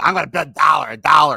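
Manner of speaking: mock imitation voice. Complaining about auction bidders, mocking people who bid one dollar. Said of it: "your freaking one dollar bids on auctions".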